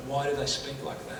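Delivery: ordinary delivery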